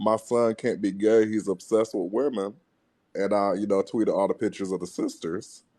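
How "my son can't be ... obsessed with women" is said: usual speaking voice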